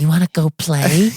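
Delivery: put-on high sickly child voice. Voicing an imagined ghost of a sickly little boy: sickly little ghost boy voice. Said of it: "the second one is a sickly little boy".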